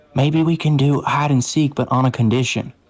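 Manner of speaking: whispering voice. Taking another character aside during a game to share an idea: whisper. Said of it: "I'm gonna whis-, whisper to you".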